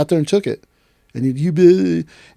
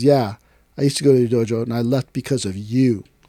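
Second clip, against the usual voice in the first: play-acted dry, flat, expressionless deadpan delivery; 3 semitones lower than usual. Retelling a man's reply at a bar: imitating a deadpan delivery. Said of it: "the guy looked at me deadpan and goes".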